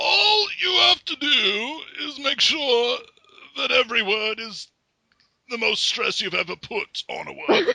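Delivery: put-on elderly British accent. Showing off an old man british accent after calling their accents terrible: old man british accent. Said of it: "I can do old man British accent".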